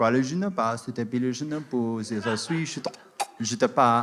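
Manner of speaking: fake French-sounding babble. Retelling talking fake French gibberish to a French guy: fake French gibberish. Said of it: "French people do that".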